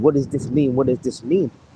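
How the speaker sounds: imitated crying, tearful voice. Retelling what she kept asking while crying: imitating someone crying. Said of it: "she was all crying and saying".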